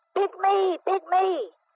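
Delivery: yelled up high. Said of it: "he jumped up and yelled".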